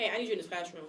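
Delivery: plain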